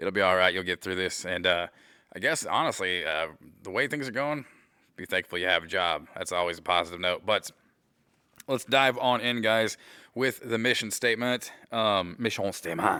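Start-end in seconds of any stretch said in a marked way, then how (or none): 12.2-13.0 horrible, bad put-on French accent. Jokingly announcing the mission statement: horrible french accent. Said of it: "Horrible French accent".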